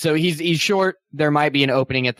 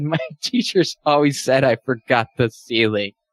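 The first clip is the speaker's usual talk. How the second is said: chuckle turning into hysterical laughter, then weeping. Storyteller voicing a man who breaks down, hysterical laughing into crying. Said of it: "and then it kind of gets hysterical, and he starts crying".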